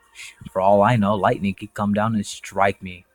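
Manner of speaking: normal talking voice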